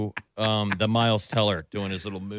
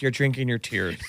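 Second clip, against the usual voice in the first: usual speaking voice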